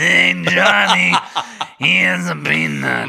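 loud, heavy, extra-raspy rough creepy voice. Told that more rasp isn't better, speaker repeats the line: very raspy creepy voice. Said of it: "The more rasp, the creepier".

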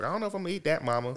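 put-on broad country accent, laid on thick. Imitating a woman's son from a TikTok, country accent. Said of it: "he sounds country as fuck".

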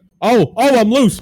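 shrill, very high, loud outcry. Doing an impression of another racer getting loose: impression of Blake.

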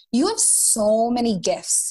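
heavy, full-on Minnesota accent. Speaking to a listener about a person many people loved, in a strong Minnesotan accent. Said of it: "I sounded so Minnesotan".

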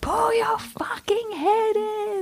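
raging, shrill, very high, drawn-out scream. Retelling how he woke up early and slammed his door: imitating someone screaming. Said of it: "just screaming that out".

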